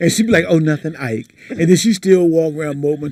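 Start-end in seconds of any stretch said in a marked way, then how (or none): 0.5-1.3 put-on quiet shy voice, quieter. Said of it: "being all quiet and shy".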